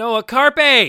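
mock very high, very loud frantic shriek. Retelling pointing at the TV during a commercial: retelling a frantic exclamation. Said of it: "I frantically pointed at the T V behind me and said".

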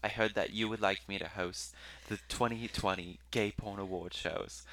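put-on British accent. Reading out an email from a woman in the UK: British accent imitating Rebecca Moore. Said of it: "That was my British accent".

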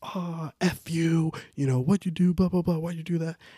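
high-pitched, squeaky, mock angry little kid voice. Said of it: "starts cursing at the kid".

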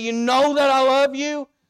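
fake fed-up, exasperated tone. Retelling Peter's reply to the third question: Peter exasperated, acted out. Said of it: "the exasperation in his voice to say".

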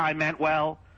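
flat, mechanical, machine-like robotic monotone. Repeating someone's line back in the tone they used, flat robotic voice. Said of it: "You actually said that in a robotic tone".

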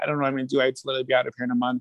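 acted, tearful voice speaking through crying. Retelling a call to a sister about losing housing: retelling own crying.

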